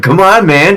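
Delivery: mock little-kid voice, taunting.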